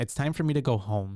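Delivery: ordinary delivery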